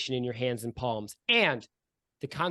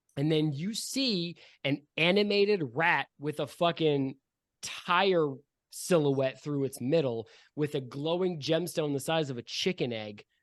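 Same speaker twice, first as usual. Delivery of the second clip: plain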